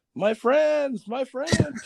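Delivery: put-on very high, slow, drawn-out holler. Speaker recounts how he calls out in the woods, retelling screaming in the woods. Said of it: "I'm out there in the woods screaming".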